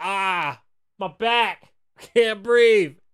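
put-on woman's cry of agony. Retelling a foam-pit story, the speaker acts out a hurt woman in agony. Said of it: "the lady is in agony".

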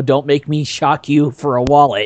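ordinary talk

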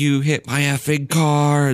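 high, drawn-out, cursing screaming. Retelling a car incident, quoting the woman screaming at them: imitating someone screaming. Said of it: "Like screaming at us".

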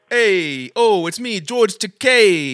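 loud Italian accent with one word stretched long. Speakers take turns making distinctive non-Italian voices Italian: George Takei as Italian. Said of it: "picking people with distinctive non-Italian voices, making them Italian".

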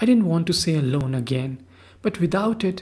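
plain

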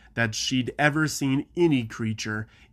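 ordinary delivery

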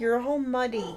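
soft, weary, worn-out, tired voice. [name] speaks to her muddy cat Mirmir in a tired voice. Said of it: "[name] said in a tired voice".

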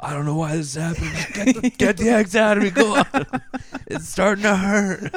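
very loud, high-pitched, pained pleading voice. Imagining what Chris Christie would say: imitating Chris Christie. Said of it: "what does he feel about all of this?".

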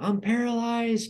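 put-on very high-pitched panicked shout. Recalling lying alone on morphine waiting for an x-ray, retelling a yell. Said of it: "and I start yelling".

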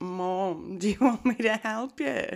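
high, very slow, "Mom" long and drawn out. Imitating how Jimmy offers help with the dishes: imitating Jimmy. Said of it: "You normally say".

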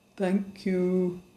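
deep, slow, unhurried, soft bear voice. A bear, just found among the boxes, thanks the visitors in a deep and slow voice. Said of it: "in a deep and slow voice".

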